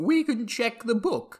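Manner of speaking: faltering put-on queen voice. Playing the Queen, answering a question about protocol, slipping queen accent. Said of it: "my accent has... I've lost it already".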